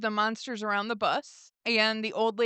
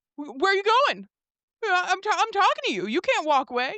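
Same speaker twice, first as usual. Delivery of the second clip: mock yelling, much higher; 9 semitones higher, 5 dB louder than usual. Describing a man yelling at figures walking away, retelling someone yelling. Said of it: "he starts yelling at them like".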